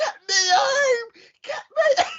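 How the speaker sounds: very high, shrill screaming. Retelling a woman in the car park screaming. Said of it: "in the car park screaming".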